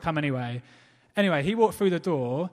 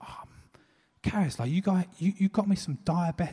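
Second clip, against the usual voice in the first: mock teary, welling-up voice, slower. Retelling how a guy reacted to being given diabetic jam, imitating him welling up. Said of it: "Just welling up in this moment".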